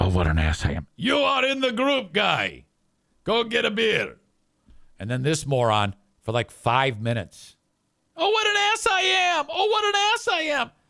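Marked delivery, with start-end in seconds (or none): 0.0-0.9 mock whisper, much lower pitch. Speaker retells someone whispering into his dad's ear: imitating a whisper. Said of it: "He whispers it".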